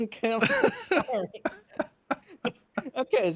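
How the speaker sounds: laughing through words, swooping high. Apologizing to the co-host while unable to stop laughing: laughing while talking. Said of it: "I can't stop laughing".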